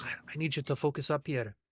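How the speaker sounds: whispering quietly. Playing a character who crouches to a creature: whispering quietly to a character. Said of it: "I get down and whisper to him, uh, uh, real quiet".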